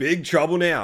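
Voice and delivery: ordinary talk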